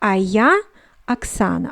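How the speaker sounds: plain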